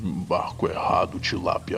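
deep, low, grave voice. As game narrator, voicing an unseen figure speaking from behind the player: deep voice. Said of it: "ouve uma voz grave vindo de trás de ti".

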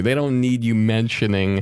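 ordinary talk

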